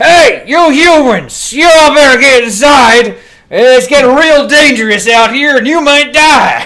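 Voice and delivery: shrill, very loud, high-pitched loudspeaker-like bellow. Calling out to the humans over loudspeakers: shouting. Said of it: "As I will just shout".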